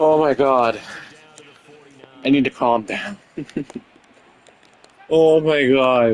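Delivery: speaking through hard, tearful laughter. Reacting to a funny play in a football game, laughing hard while talking. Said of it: "I'm crying right now".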